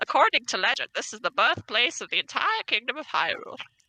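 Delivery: funny, silly put-on old man voice. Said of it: "Do a funny voice".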